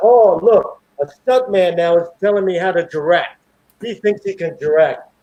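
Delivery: mild, held-back yell at moderate strength. Retelling the director yelling in front of everybody: imitating the director yelling. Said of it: "he yells out".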